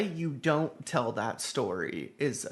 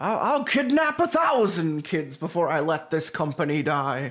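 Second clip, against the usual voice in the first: loud, high, belted character voice, pitched up; 5 semitones higher, 7 dB louder than usual. Quoting a line from Monsters, Inc.: Mister Waternoose voice. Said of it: "the voice of Mister Waternoose".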